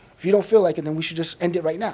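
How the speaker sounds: plain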